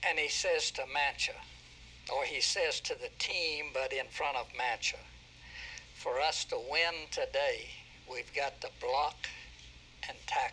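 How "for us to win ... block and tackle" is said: acted, stern, firm and no-nonsense tone. Retelling what he said to the team in front of Mancha, in a firm, stern voice. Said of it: "He said that in a very firm, stern voice".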